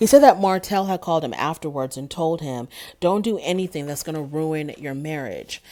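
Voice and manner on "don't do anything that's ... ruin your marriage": usual speaking voice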